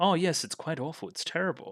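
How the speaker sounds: put-on, high, condescending, talking-down tone. Retelling a character's reply about the mess: imitating a condescending tone. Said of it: "you would say this in kind of a condescending tone".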